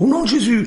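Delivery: shouted loudly. Acting out how some people are seen yelling, shouted. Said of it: "Il n'a pas hurlé comme je les vois là-bas des fois".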